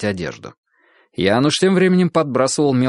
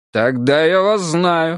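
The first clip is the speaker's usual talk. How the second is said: glad, delighted, joyful outburst, slow; 4 semitones higher than usual. A character answers a blushing woman's reply: joyful exclamation. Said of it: "радостно воскликнул Беневский".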